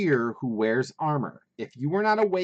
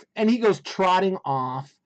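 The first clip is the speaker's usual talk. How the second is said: usual speaking voice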